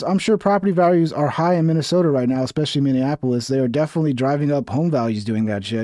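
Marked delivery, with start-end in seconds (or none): none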